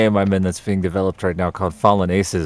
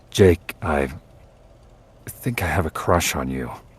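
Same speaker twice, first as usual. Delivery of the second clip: bashful, shy, timid voice; 3 semitones lower, 3 dB quieter than usual. Reading out a request to say a line shyly: shy, timid tone. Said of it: "please say this following under the shyness of your tone".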